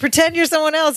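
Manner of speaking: urgent, high-pitched delivery. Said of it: "She goes".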